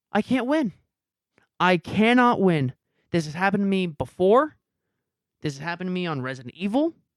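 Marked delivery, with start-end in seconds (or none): 0.2-2.8 slow, put-on tearful sobbing, crying lament. Recalling bawling into a blanket, retelling own crying. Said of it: "I just start crying because I'm like".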